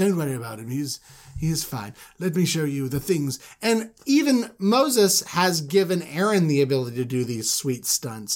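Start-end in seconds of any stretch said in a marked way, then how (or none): 0.0-3.4 supremely eloquent, grand delivery. Retelling the Moses story, Aaron addressing the gathered elders: supremely eloquent Aaron voice. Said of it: "with just, like, supreme eloquence".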